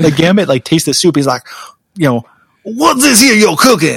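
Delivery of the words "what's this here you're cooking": put-on angry voice, higher. Reading a comic scene aloud, imitating furious Gambit. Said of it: "he's just immediately furious".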